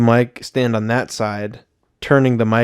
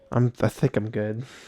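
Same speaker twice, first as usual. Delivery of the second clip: fake, put-on lisp, quieter; 8 dB quieter than usual. Turning down an offer of edibles with a put-on lisp. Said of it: "You trying to develop a lisp there?".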